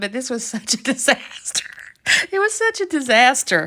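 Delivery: talking through laughter. Telling a story about a crafting mishap, laughing while talking. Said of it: "I'm sorry I'm laughing".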